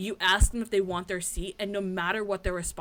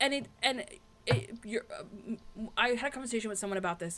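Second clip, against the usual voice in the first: stuttering, stumbling over words; 3 semitones higher, 5 dB quieter than usual. Recording with another speaker, stuttering over words. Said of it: "I'm like stuttering over my words again".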